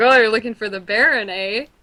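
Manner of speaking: light, joking, playful teasing tone. Retelling how a man in the vineyard answered: imitating a playful farmer.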